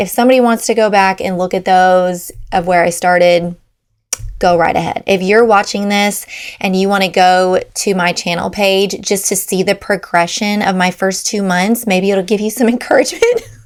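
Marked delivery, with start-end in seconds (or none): 11.9-13.4 swooping words broken by embarrassed laughter. Inviting viewers to see early videos, laughing while talking. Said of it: "I'm laughing because it's embarrassing".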